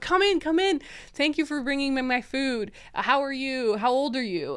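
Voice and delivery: put-on super friendly, kindly, welcoming old man voice. Retelling a story, the speaker voices an owner welcoming a woman bringing his food; friendly old man voice. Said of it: "really friendly old man, like super friendly".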